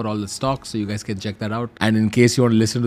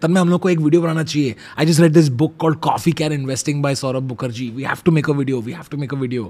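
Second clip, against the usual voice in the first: mock-excited voice, pitched higher; 3 semitones higher than usual. Retelling how his friend called him about making a video: imitating Anshuman's excitement. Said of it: "He called me very excitedly and he was like".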